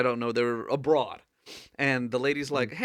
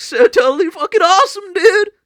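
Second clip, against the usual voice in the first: very high, booming, full-throated dude shout; 16 dB louder than usual. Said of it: "he went all the way from, like".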